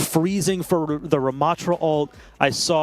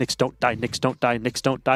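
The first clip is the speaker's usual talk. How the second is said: ordinary delivery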